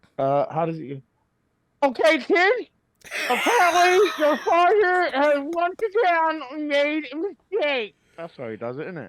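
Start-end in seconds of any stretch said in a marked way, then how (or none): 1.9-8.0 goofy put-on voice, very high, shrill and drawn-out. Recalling how a scene goes, addressing the kid, in a silly voice. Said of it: "he does a silly voice though".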